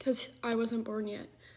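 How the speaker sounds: soft speech broken by hiccups. Telling a family story mid-conversation, talking with the hiccups. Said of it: "I have the hiccups".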